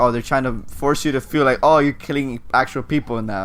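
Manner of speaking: usual speaking voice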